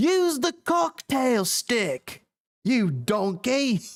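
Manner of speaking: put-on English accent, high-pitched and slow. Doing an impression of an angry chef: Gordon Ramsay impression.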